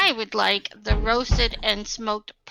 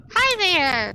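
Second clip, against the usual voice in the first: overdone put-on barmaid voice, pitched too high; 8 semitones higher, 4 dB louder than usual. Narrating a tabletop game, voicing the barmaid greeting the party, too high-pitched voice. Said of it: "That was a little high".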